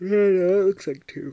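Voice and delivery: talking through a yawn. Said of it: "Sorry, I'm yawning".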